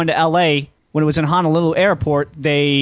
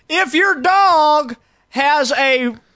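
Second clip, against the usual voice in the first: put-on very high-pitched, comic southern-accented hollering; 11 semitones higher than usual. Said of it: "he yells when he talks".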